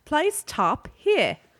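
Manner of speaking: very high-pitched British woman's voice. Explaining how the iPad talks you through the steps, iPad's British woman's voice. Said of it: "in like a British woman's voice".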